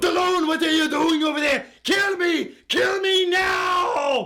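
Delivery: very high-pitched, slow, shouted delivery. A video host starts the promised impressions, calling out to Stallone: Arnold Schwarzenegger impression. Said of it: "an Arnold Schwarzenegger impression".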